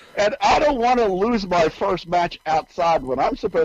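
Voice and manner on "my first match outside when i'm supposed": ordinary talk, nothing marked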